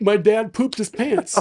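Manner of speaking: mock re-enacted yelling. Speaker retells riding a bike around the neighborhood; retelling a yell. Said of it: "I'm yelling at it".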